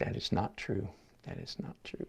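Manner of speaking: whispered, trembling, quavering voice. Acting out telling yourself it isn't true after criticism, in a mock quavering voice. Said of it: "through quavering, quavering voice and quivering lip".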